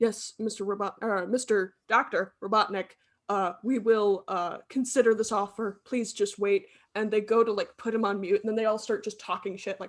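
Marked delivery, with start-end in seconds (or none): 0.0-6.7 solemn, formal, very serious and grave tone. Acting out officials answering a phone call in a story pitch: very serious tone. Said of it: "very serious".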